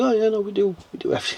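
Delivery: high, offhand, casual nonchalance.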